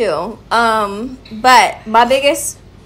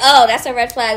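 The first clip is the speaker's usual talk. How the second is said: usual speaking voice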